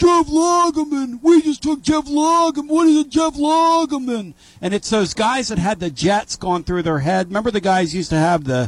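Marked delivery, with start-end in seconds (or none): 0.0-4.3 put-on very high, drawn-out screaming in New York accent. Retelling a Jets fan's reaction to a draft pick: imitating a fan screaming in New York accent. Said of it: "the guy screaming his best Jeff Lageman in his New York accent".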